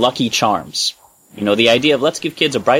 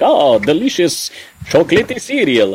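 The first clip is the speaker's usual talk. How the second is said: put-on vampire voice with Transylvanian accent; 4 semitones higher than usual. Speaker recalling the 1972 cereal commercial, Count Chocula Transylvanian accent. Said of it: "what we assume is a Transylvanian accent".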